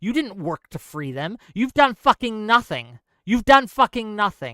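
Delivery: mad, heated, venting angry tirade. Speaker ranting about people who turned a cause into a hashtag, angry. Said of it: "I'm getting mad again".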